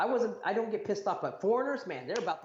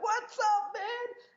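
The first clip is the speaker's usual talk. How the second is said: shrill, loud, high-pitched hollering; 13 semitones higher than usual. Speaker retells greeting a guy he hugged, retelling own loud yelling. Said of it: "I was screaming and yelling like loud".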